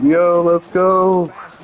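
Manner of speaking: mock, high, hyped cheering yell. Retelling cheering at a daughter's soccer goal: imitating his own screaming. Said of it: "I'm screaming, like".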